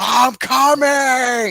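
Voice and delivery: loud, high all-out yell, coming drawn out long. Describing a clip, the speaker acts out the man in it: retelling a yell. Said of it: "where he's just yelling".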